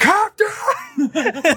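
very high, shrill scream at the top of the lungs. Retelling a shark man calling the captain: imitating a shark man's scream. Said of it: "a large shark man screaming at the top of his lungs".

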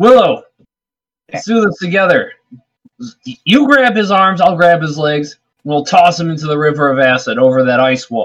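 called out loudly across a distance. In a game scene, a character calls out a plan to willow: in-character shout. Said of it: "I'm going to shout to Willow".

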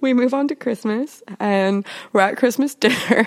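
talking through held-back giggles. Telling a Christmas dinner story after some booze, giggly. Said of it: "so giggly right now".

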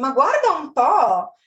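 delighted, happy, pleasantly surprised exclamation. Language lesson host demonstrating an Italian phrase; pleasant surprise. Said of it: "It expresses pleasant surprise".

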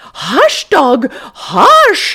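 very high, shrill, swooping scream. Reading a story aloud, voicing a woman's line to the dog: screaming. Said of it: "she screamed".

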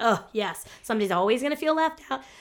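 ordinary talk, nothing marked

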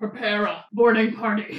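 grand, big sci-fi movie-villain voice. Retelling a Star Wars story to everyone, the speaker quotes Vader in Darth Vader voice. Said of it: "that was my great Darth Vader voice".

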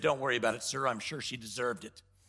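very low, quiet, totally deadpan delivery. Retelling a story, quoting an ambassador's reply to the president: retelling a deadpan reply. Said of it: "totally deadpanned".

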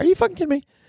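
very high, squeaky voice full of outraged disbelief.

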